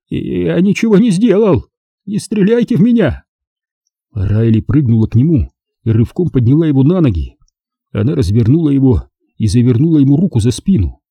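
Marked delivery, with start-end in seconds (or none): 0.1-3.2 high, shaking, trembling pleading voice. A man cowering on the floor raises his hands to the woman who found him, trembling plea. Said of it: "подняв руки и дрожа".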